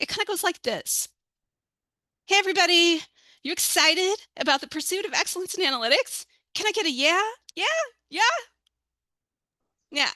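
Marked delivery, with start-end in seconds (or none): 2.3-10.1 jazzed-up, peppy cheerleader-style rallying cheer. Speaker acts out hyping up everybody about analytics, peppy cheerleader hype. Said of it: "I was a cheerleader... I get really jazzed about it".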